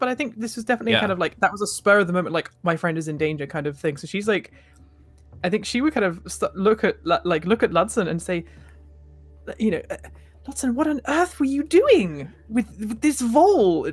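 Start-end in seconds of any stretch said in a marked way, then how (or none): 9.5-13.9 quiet scolding stage whisper, much higher, slower. Her character asks ludson what he was doing with the vole, quiet reprimanding stage whisper. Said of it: "sort of quietly enough that hopefully the vole doesn't hear".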